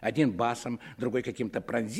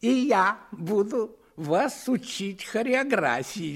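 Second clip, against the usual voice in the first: very high, slow, laughing mocking echo; 9 semitones higher, 6 dB louder than usual. A brunette mimics the narrator's words back at him, laughing, mocking mimicry. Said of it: "смеясь, передразнила меня".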